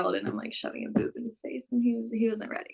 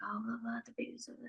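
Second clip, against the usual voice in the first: soft, unvoiced whisper. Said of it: "like, whispering".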